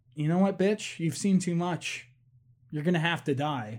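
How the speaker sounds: usual speaking voice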